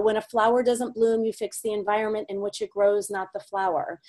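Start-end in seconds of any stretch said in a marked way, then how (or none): none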